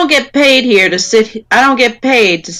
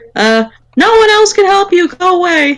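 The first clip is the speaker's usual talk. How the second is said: very high, fake, disguised voice; 10 semitones higher than usual. Retelling a man at a gate pretending to be someone else: high-pitched disguised voice. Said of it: "making a high-pitched voice".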